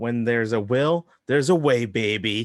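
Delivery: reality TV narrator-style announcer voiceover delivery. Imagining the show's voice saying her motto: Big Brother narrator voice. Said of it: "hear the Big Brother voice say this".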